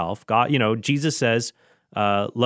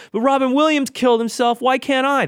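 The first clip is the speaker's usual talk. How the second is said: put-on very high, kid-like, whiny voice; 13 semitones higher, 4 dB louder than usual. Quoting hospital patients the way they said it: mock whining like kids. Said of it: "they literally said it like this, like kids whining".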